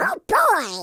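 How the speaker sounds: very high, loud cartoon duck voice. Retelling a short recording session line: Donald Duck voice. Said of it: "I think it was Donald Duck".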